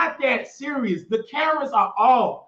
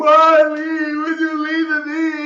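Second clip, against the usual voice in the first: loud, mock tearful, sobbing, pleading voice; 4 semitones higher, 5 dB louder than usual. Retelling what Rico said to Wiley, imitating Rico crying. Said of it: "He's crying".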